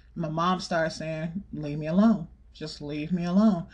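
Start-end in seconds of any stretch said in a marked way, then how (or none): 1.5-3.6 imitated fed-up, irritated tone, lower pitch. Retelling the mother pushing back at the man in her face: imitating a fed-up warning tone. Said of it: "I know that tone".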